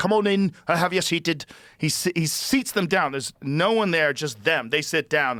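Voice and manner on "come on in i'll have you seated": welcoming, pitched-up Scottish brogue. Retelling a Scottish doorman seating a couple: imitating Bobby's Scottish accent. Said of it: "He was a Scottish guy".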